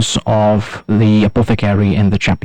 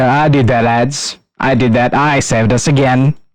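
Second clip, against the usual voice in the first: boastful soldier character voice, higher pitch; 3 semitones higher than usual. Voicing a soldier who steps forward to claim credit: boasting soldier. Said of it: "starts boasting".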